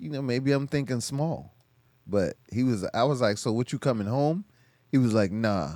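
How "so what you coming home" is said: usual speaking voice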